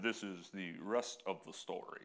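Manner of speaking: voice dropped low and deep. Introducing the story behind the story: Paul Harvey impression. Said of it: "if Paul Harvey were with us, he would say".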